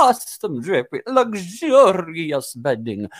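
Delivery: slow, high, grand, showy drag queen delivery. Retelling how a guest ordered people around on tv: imitating a drag-style delivery. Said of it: "It's very drag".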